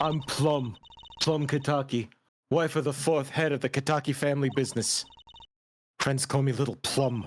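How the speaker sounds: drag voice from burly man. Voicing a game character, a woman played like a burly man in drag: voice of a character from Gaki no Tsukai. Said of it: "I'm doing the voice of a character that's often portrayed in".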